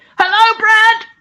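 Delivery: very high-pitched, loud calling shout. Calling out a greeting to someone who isn't here: shouting louder. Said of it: "I'll shout a bit louder".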